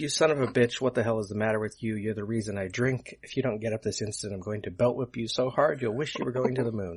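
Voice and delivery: ordinary talk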